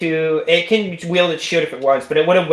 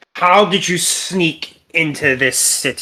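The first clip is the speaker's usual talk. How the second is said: very deep, hollow guard voice. An undead city guard questions the player character, in a very deep, hollow voice. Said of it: "and it looks at it's one of the one of the guards that looks at you, / but instead they're just skeleton bones. / and he / In a very deep and hollow voice. / and it looks at it's one of the one of the".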